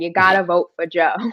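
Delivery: put-on thick Boston accent. Recalling canvassing for Joe Kennedy, in a thick Boston accent. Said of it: "got my thickest Boston accent and I said".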